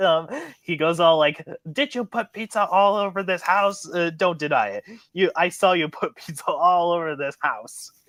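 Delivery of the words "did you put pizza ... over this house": fast, rattled-off angry rant. Describing an episode's opening, retelling Benson's rant, imitating Benson's angry fast rant. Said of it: "go on this rant where he's basically talking fast".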